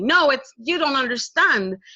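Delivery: put-on yelled protest, mild and held in check. Telling a story, acting out how she yelled back after being told it's okay. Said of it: "She yelled at me".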